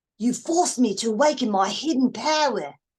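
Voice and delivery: English accent with an Australian tinge. Trying out an accent for someone while talking about accents, in an australian slash english accent. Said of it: "I'd like to think I have an Australian slash English".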